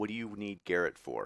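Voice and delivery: man's voice, quick. Voicing a middle-aged woman who answers in a male voice. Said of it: "you hear in a male voice".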